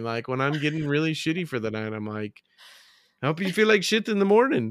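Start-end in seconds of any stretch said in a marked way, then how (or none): 3.2-4.7 put-on Irish accent, pitched up. Quoting a woman's send-off line in an Irish accent. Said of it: "enough Irish that I can do that accent".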